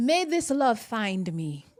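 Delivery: clumsy, bad, very loud, put-on Nigerian accent. Speaker acting out a line she had in mind, in a bad fake Nigerian accent. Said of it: "that was such a bad accent".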